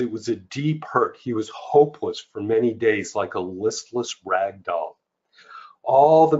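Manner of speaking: normal talking voice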